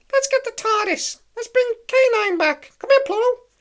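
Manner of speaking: squeaked out, loud and high-pitched. Picturing Mickey Mouse in the corner at Disney, doing a Mickey Mouse impression. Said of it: "my Mickey Mouse impression".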